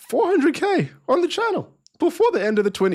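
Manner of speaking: high voice cracking and breaking up. A streamer talking to viewers on the channel, voice cracking. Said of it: "my voice just cracked".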